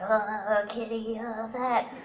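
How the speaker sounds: very slow, teasing, self-mocking kid voice. Retelling how they used to make fun of themselves: mocking oneself as a chubby kid. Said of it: "I would make fun of myself going like".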